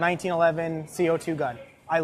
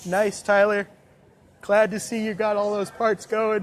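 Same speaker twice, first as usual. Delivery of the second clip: talking mid-yawn, louder; 4 semitones higher, 4 dB louder than usual. Speaking to tyler during a game broadcast, yawning while talking. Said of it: "sorry, yawning a little bit".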